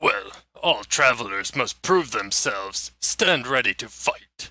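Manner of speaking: haughty, puffed-up, self-important brute monster voice. Voicing a self-important orc who stops the travelers: self-important orc voice. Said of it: "as he approaches your wagon, he says".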